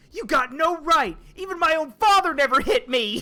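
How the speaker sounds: loud, high indignant outburst.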